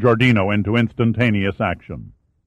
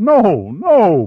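very high pleading with a forced tremor; 10 semitones higher, 4 dB louder than usual. A man held at gunpoint begs the armed guide, pleading. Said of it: "pleaded Pitt".

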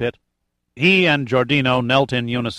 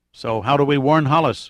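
usual speaking voice

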